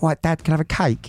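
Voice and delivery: put-on very high, small-child voice with London accent. Recalling old voice memos, the dad imitates his little boy's London accent. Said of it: "my little boy had like this London accent".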